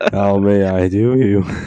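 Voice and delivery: fake high, stoned voice. Acting out answering a phone call after spilling thinner: acting high. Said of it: "so you're, like, super high".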